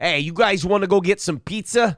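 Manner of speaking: put-on Chicago accent. Asked whether a woman talks that way, speaker demonstrates a Chicago accent. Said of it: "That's the Chicago accent".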